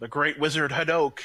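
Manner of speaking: loud, high-pitched yelling at full shout. In character during the game, yelling out a wizard's name. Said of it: "I'm yelling out".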